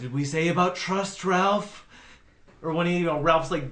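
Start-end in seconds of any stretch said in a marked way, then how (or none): 0.0-1.9 deliberately terrible put-on scolding-dad voice. Quoting a movie dad scolding Ralph: awful Jeffrey Combs impression. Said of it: "his dad's doing a really awful Jeffrey Combs, Combs impression".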